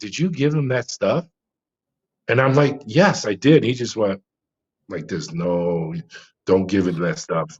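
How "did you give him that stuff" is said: acted-out whisper, much quieter. Retelling what an agent whispered to the speaker up close, in a retold whisper. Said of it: "And he whispers to me".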